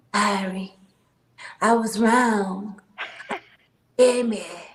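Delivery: mock softened raspy smoker's voice. Retelling a caller who phoned back: imitating a softened raspy smoker's voice. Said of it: "tried to soften her tone with her raspy ass fucking cigarette smoking voice".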